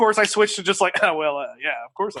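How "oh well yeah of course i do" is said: super suave, cool, low and smooth delivery. Retelling his answer to a zombie actor who recognized him, super suave. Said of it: "Like super suave".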